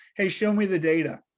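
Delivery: ordinary delivery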